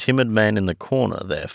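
ordinary delivery, nothing marked

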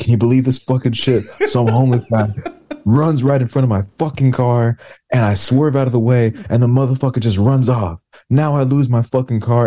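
worked-up angry rant. Retelling what a drunk driver said to a cop: imitating an angry rant. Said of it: "when somebody just becomes angry".

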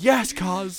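mock jubilant, loud, high celebratory yell. Retelling a celebration after a try, toward the camera: imitating own loud shout. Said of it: "really loudly".

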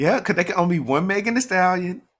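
high-pitched confident voice. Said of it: "she said".

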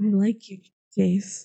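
voice dropped, unhurried. Narrator reading a man repeating his confession to another man, in a lower voice. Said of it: "With a lower voice".

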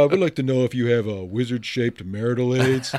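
man's put-on woman's voice. Retelling a prank call, imitating a man faking a woman's voice. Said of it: "like a guy trying to be a girl".

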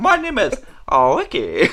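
put-on Japanese accent. Laughing through a joke bit, introducing himself by a new name: fake japanese accent.

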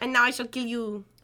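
acted speech in a put-on French accent. Acting out the woman after the other speaker suggests she's French: put-on French accent. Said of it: "Maybe she's French".

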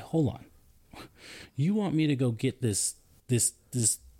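legitimately angry, protesting tone. Retelling a reply to being told about a discharge: imitating own angry words. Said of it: "I'm legitimately angry. I'm like".

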